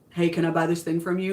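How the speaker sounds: ordinary talk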